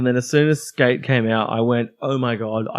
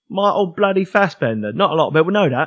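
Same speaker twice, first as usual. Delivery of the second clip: put-on cockney actor voice, pitched higher; 4 semitones higher than usual. Joking about a film actor: Michael Caine impression. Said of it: "my Michael Caine impression".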